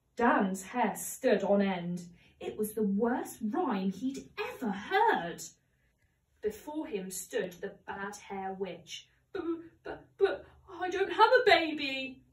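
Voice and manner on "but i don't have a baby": halting, slow, high-pitched stammering. A man facing a witch answers her, stammering. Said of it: "stammered Dan".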